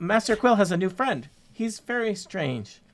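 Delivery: put-on high-pitched young woman's voice. Voicing a young servant woman greeting visitors in the kitchen: young servant woman voice. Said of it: "a young woman, a servant".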